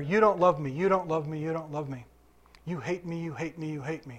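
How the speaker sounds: plain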